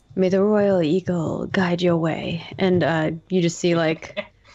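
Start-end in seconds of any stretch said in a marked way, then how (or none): 0.2-2.5 low-key, murmured, half to herself. Voicing a character blessing an ally: under her breath. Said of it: "says under her breath some words".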